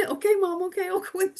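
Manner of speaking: placating, high, sing-song voice. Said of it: "fully grown man going".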